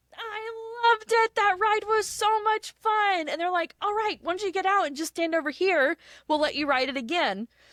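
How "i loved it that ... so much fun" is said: acted-out high, drawn-out scream, stretching the "I". Retelling what a rider screamed to the cast members after the ride, retelling a scream. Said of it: "Bella screams to the cast members".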